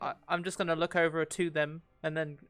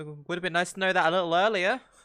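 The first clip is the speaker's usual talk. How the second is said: jokey, half-laughing, with a laugh in it; 6 dB louder than usual. In character, answering the group about the guy, laughing while joking. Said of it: "I kind of laugh and be like".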